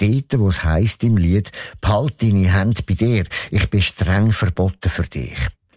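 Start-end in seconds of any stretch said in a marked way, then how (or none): none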